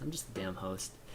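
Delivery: quiet, hushed voice.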